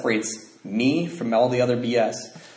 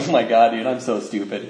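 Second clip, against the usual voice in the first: acted-out self-mocking laughter, slower. Lying in bed, the speaker recounts what they said to themself: retelling laughing at oneself. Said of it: "I was like laughing".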